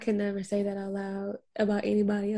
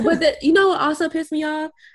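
plain

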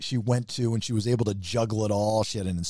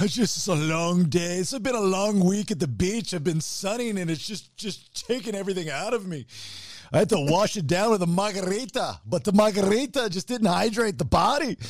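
put-on comedy movie character voice, higher; 9 semitones higher than usual. Joking about being worn out by the beach: voice like a dude from Austin Powers. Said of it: "I sound like the dude from Austin Powers".

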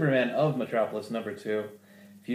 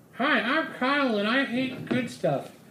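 very high, pitched-up character voice; 13 semitones higher than usual. Asked by the other speaker to read like Kyle: Kyle impression. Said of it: "you should read it like Kyle".

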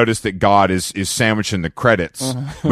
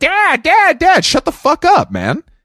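put-on very high, rowdy, shrill child hollering; 5 dB louder than usual. Retelling kids running around the pool yelling at their dad: imitating kids screaming. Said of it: "running around screaming and yelling".

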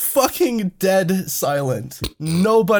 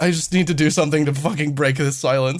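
ordinary delivery

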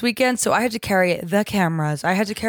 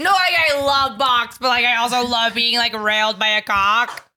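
put-on party girl character voice; 2 semitones higher than usual.

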